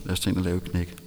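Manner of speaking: ordinary talk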